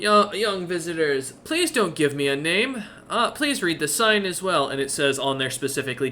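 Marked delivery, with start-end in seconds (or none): 0.0-4.7 cheerful smiling voice, higher pitch. Voicing a shopkeeper greeting the party on entering: smiling happily. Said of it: "he kinda smiles happily seeing you lot and goes".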